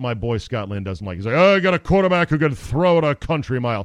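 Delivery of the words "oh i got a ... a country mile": slightly cheesy, loud sportscast announcer voice. Mocking a call that Scott Lynn doesn't like, use a little bit cheesy announcer voice. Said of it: "A little bit cheesy announcer guy voice".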